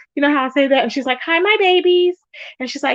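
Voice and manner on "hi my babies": teasing, high-pitched, mocking parody voice. Retelling how another woman mocked the speaker's way of greeting: mocking imitation. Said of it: "she was like mocking me".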